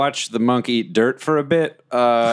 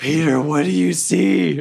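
loud whisper, higher; 5 semitones higher than usual. Calling into a cave in character: loud whisper. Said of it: "I whisper really loudly into the cave".

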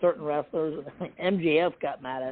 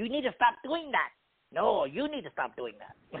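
put-on character voice, high, swooping and sing-song; 5 semitones higher than usual. Joking about a feud by keeping up the voice: Danhausen voice. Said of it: "I'll just keep doing his voice".

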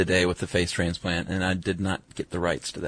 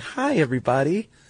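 very high, put-on, sugary sweet voice; 9 semitones higher than usual. Retelling how the producer greeted the kids: imitating Jerry's sweet smiling greeting. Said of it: "She put on a real sweet face and was smiling".

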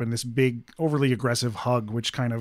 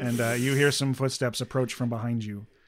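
ordinary talk

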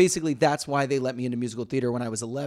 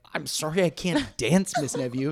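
acted heartbroken tone, higher pitch; 3 semitones higher than usual. Retelling a reply to a dance teacher's harsh criticism: imitating own heartbroken self. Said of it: "so heartbroken and like".

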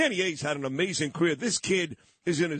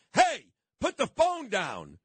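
mock, sudden, high, swooping shouted yell; 6 semitones higher than usual. Recounting someone yelling in the middle of taping a scene, retelling a yell. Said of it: "starts yelling".

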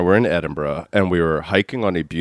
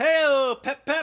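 put-on drunken yell, very high pitched and drawn out; 3 dB quieter than usual. Retelling yelling at passersby from a cab while drunk: retelling drunken yelling. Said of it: "I was just yelling".

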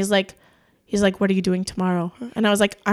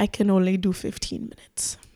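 clumsy put-on Spanish accent, whispered, hushed and breathy; 5 dB quieter than usual. Retelling what a guy said, in a shit Spanish accent. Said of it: "I have such a shit Spanish accent".

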